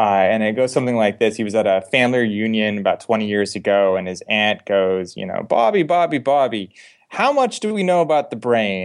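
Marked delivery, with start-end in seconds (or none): 5.2-8.9 put-on New Jersey accent, one name stretched long. Retelling an aunt's question at a family reunion, in a New Jersey accent. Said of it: "I'm framing a New Jersey accent".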